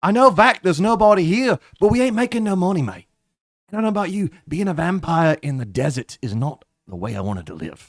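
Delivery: high, loud pirate voice. Player voicing a vampire character talking to a companion; Jack Sparrow voice. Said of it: "Why do you sound like Jack Sparrow?".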